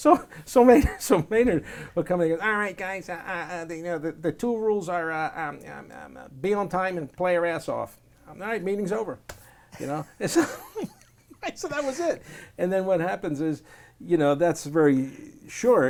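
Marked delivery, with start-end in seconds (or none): 2.5-9.2 high helium voice, halting, full of uh's and um's. Act out Maynard coming in to give the guys two rules, in Maynard's helium voice. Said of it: "like he was doing helium".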